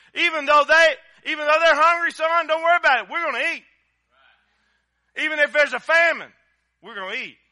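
full-on loud, high-pitched preaching delivery. Speaker relaying what he told his son, getting into loud preaching. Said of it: "I get so loud".

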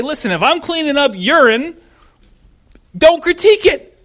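high, loud, prideful. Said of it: "both of us in pride would say".

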